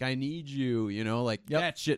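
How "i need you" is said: put-on wailing, much slower. Describing a scene after a battle, imitating Asajj wailing. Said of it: "she's just like wailing, crying".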